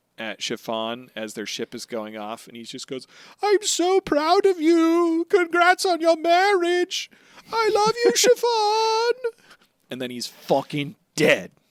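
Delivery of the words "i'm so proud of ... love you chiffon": shrill, very high, all-out yell at full volume. Retelling a scene, shouting after a departing ship: Pound shouting as loud as he can. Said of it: "he shouts as loud as he can".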